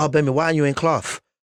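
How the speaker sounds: imitated, mock lisp. Retelling the head teacher catching him out of class, imitating a teacher's lisp. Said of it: "This guy had a lisp".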